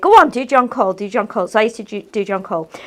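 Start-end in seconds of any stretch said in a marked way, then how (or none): none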